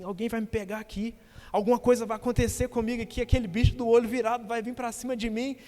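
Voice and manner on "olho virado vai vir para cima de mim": ordinary talk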